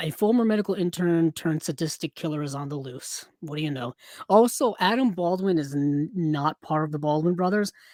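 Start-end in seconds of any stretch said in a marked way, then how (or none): none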